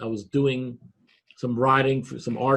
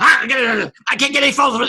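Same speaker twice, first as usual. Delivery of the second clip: eager, worked-up, excited, high and raised voice; 11 semitones higher, 6 dB louder than usual. Retelling what the editor said about needing photos: impression of Don McGregor. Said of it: "This is a very good impression".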